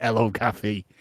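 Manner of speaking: smug, self-satisfied, pleased-with-himself, acted-out delivery. Retelling Harvey greeting Kathy at her door: smug Harvey voice. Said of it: "Harvey's just kind of has this smug grin, like".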